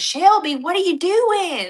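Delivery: high, played-up, put-on Southern American drawl. Imitating a creator calling to his wife: imitating a southern accent. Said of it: "They're Southern of some kind".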